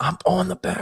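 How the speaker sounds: high-pitched, hushed, under-the-breath whisper. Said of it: "And we're whispering".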